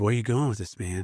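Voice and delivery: easygoing, laid-back surfer-dude voice. Recalling someone questioning him at the office, imitating Alan's surfer voice. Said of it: "he had this kind of uh, surfer voice".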